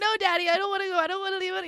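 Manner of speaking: put-on very high, tearful, wailing child's crying voice. Retelling begging a parent to stay as a young kid: imitating crying like a kid. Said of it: "just crying like a kid does".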